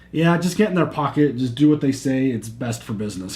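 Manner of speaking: ordinary talk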